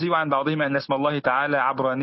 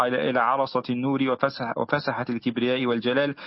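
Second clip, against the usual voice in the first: ordinary talk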